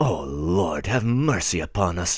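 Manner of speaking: moaned in altered voice. The narrator reads a man ending his thoughts to himself: moaning. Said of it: "he moaned in conclusion, in quite a different voice".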